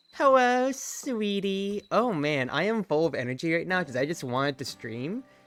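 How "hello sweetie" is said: own natural voice pitched a little higher. Recalling the voice given to Misty, in Misty voice. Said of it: "I think I was just myself, but a little higher in intonation".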